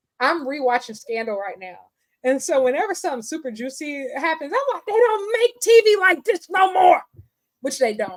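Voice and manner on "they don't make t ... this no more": acted-out pitched-up shout, hooked and engrossed. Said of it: "I start screaming at the T V".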